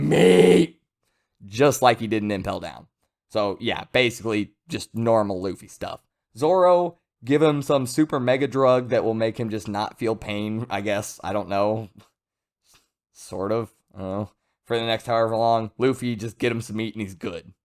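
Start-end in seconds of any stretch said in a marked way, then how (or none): 0.0-0.8 loud, high scream. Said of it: "just screams out".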